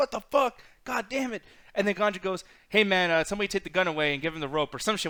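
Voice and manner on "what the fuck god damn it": high, mad, raging angry scream. Retelling the reaction when Ganja came in uninvited, re-enacting an angry scream. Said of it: "I'm like screaming, and I'm mad".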